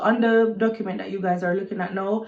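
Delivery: ordinary delivery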